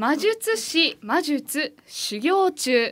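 very slow, deliberate reading, each sound spaced. Before saying the phrase three times, first it is read slowly. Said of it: "まずゆっくりと読んでみたいと思います".

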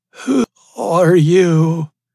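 very high, loud, breathless rasping voice. Fallen man looking up at the stranger standing over him, rasping. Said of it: "he rasped".

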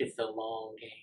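said very quietly. Retelling Sam's remark as Liam reads his phone, very quiet. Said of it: "you hear Sam very quietly say".

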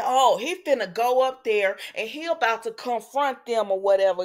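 ordinary delivery

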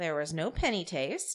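ordinary talk, nothing marked

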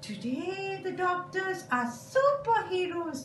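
very high put-on puppet voice. A puppet explains, in a puppet voice. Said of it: "A puppet is used to explain".

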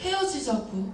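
angry, high, sharp voice.

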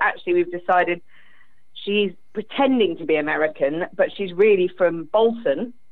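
ordinary talk

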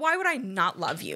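put-on angry, pissed-off voice. Retelling a parent's reply to a child's question: imitating an angry mom. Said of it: "my mom just got so pissed".

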